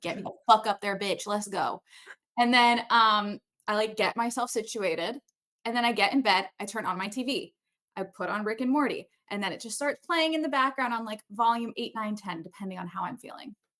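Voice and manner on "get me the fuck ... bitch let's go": put-on growling dog voice. Retelling bedtime, voicing the dog who growls: voicing Bori growling. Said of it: "He growls at me the second I lay it on the bed 'cause he's like".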